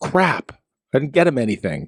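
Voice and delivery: ordinary talk, nothing marked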